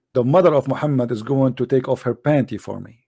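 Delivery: ordinary delivery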